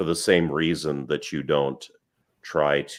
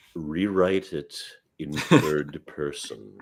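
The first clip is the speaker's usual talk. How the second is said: put-on haughty, superior voice, slow and snooty. Speaker retelling what a man said after reading their writing, imitating a snooty tone. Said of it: "not exaggerating too far with the tone of voice".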